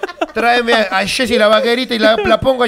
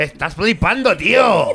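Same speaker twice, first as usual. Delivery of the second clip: put-on Castilian Spanish dubbing accent; 5 semitones lower than usual. Talking about spanish dubs, imitating them in a spain spanish dubbing accent. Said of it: "doblajes españolados".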